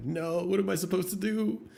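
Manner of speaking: put-on crying and yelling. Retelling a TV meme of an officer: imitating an officer yelling and crying. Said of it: "the officer yelling into the sky".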